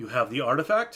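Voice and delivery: put-on mild, lightly applied German accent. Voicing a businessman client meeting the players in a warehouse: light German accent. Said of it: "a light German accent to him".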